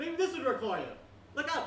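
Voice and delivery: high, loud taunting magician-style voice.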